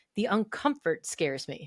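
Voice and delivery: ordinary delivery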